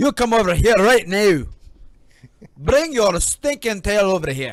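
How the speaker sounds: very loud, high character holler. Showing the others a Shrek impression: Shrek voice. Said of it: "That's my, my Shrek".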